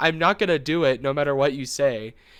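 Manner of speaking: normal talking voice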